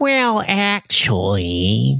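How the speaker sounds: high, swooping, squealy nasal voice. Imitating a co-host's usual opening words: imitating Chris Keithley's high-pitched nasal voice. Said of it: "high-pitched, squealy, through the nose".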